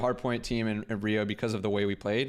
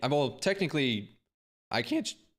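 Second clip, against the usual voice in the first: voice breaking and cracking on the words; 4 semitones higher than usual. Answering whether matches can be streamed on Twitch, voice cracking. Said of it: "another fucking voice crack".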